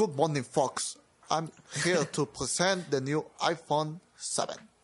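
put-on, heavily marked British presenter accent. Imagining the presenter from the video: imitating a marked british accent. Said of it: "con el acento súper británico marcado".

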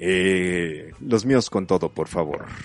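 tiger announcer voice.

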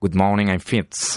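imitated Irish accent. Asked to do it, imitating Fitz's Irish accent. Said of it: "imitating you".

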